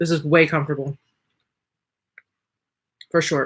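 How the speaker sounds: almost choking while talking. Eating while talking, the speaker carries on: nearly choking while talking. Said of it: "Sorry, almost choked".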